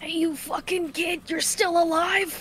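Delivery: high-pitched put-on old codger voice. Asked to do the old man voice again after a while: old man voice. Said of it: "do you have your old man voice locked and loaded?".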